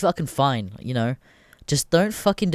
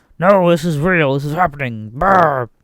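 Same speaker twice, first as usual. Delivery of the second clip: loud, angry shouting; 2 semitones higher, 7 dB louder than usual. Retelling what Alex Jones shouted on the next InfoWars episode: imitating Alex Jones shouting. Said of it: "he's shouting".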